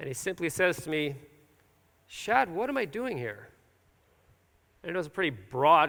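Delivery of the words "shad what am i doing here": acted distraught, troubled, searching tone, pitched up. Retelling a question someone asked after service: imitating someone distraught. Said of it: "he looks sort of distraught".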